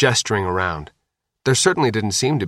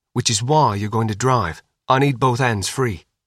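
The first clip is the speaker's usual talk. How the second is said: plain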